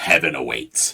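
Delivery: low, mechanical, robot-like voice. Describing a helmeted figure gripping your shoulders, the speaker voices its words: robotic voice. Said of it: "with a robotic voice".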